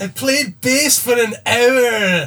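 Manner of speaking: put-on Scottish accent. Egged on by the group to do his accent, in a Scottish accent. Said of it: "Do your Scottish accent".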